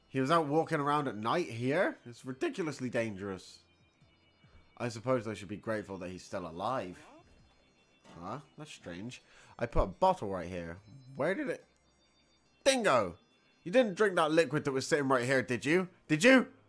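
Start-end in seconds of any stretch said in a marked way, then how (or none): 12.6-16.4 loud, raised, pressing shout. Finding a bottle gone and confronting a companion about it, shouting. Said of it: "don't shout at me like that".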